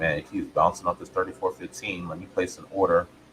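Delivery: ordinary delivery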